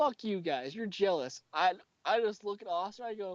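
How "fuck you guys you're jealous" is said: put-on angry, pissed-off voice. Retelling a friend's reply to being warned off: imitating an angry retort. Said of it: "looks at us with a pissed look".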